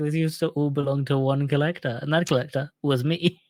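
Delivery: ordinary delivery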